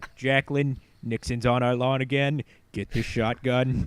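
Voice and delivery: put-on Boston politician voice. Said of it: "why I'm doing a J F K voice".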